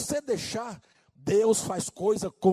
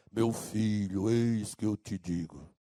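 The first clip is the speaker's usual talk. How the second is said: deep, soft radio announcer voice; 11 semitones lower, 6 dB quieter than usual. Speaker mocks church workers chasing an FM-announcer voice, deep FM announcer voice. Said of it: "em busca de voz grave, voz de locutor de F M".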